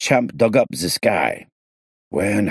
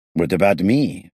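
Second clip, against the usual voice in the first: ordinary delivery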